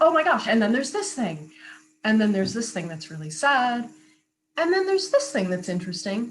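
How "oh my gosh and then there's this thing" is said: voice lifted, pitched-up, exclaiming. Teaching vocal placement, the speaker demonstrates presenting a new idea: pitched up. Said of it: "you pitch it up".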